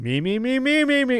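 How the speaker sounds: high, climbing mock vocal warm-up.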